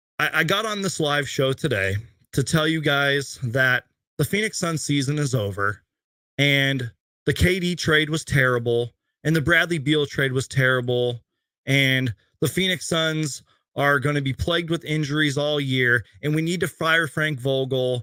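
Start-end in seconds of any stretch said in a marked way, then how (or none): none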